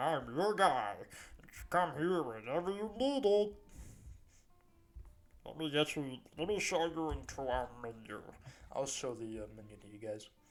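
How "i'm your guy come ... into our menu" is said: fat goblin character voice. Game master voices a fat goblin behind the bar greeting the players; fat goblin barkeep voice. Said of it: "This is a great voice".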